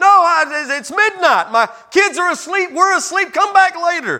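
mock very high holler. Acting out a sleepy friend refusing at midnight: hollering back. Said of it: "he hollers back from the".

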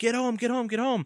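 shrill, frantic, urgent screaming at very high pitch. Retelling a frantic call from his wife during labor: imitating someone screaming. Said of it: "she's screaming".

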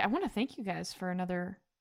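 ordinary talk

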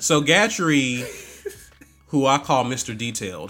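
low, heavily sarcastic, dripping with sarcasm. Asked about yesterday's t-ball game, introducing someone by nickname, with heavy sarcasm. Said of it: "I'm saying that with so much sarcasm".

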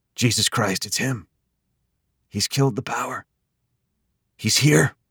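low, hushed half-whisper throughout. A husband speaks as the living room is plunged into darkness, half-whispered. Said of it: "her husband whispered".

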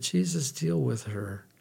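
muttering under breath. Retelling what you said as a nursing supervisor gave you a hard time, retelling muttering under breath. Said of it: "under my breath said".

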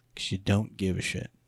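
hushed whisper. Answering own question about why conservatives don't run: whispering. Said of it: "Why'd you have to whisper that?".

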